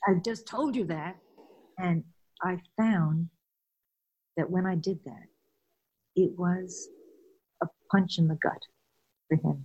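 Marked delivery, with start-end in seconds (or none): 0.1-1.2 put-on impatient, exasperated tone, higher. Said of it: "for God's sake".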